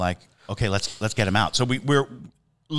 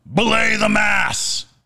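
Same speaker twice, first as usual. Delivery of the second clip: put-on very high, very loud bellowing yell; 12 semitones higher, 5 dB louder than usual. Retelling how a tour guest suddenly shouted: imitating a very loud shout. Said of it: "he just shouts very loudly".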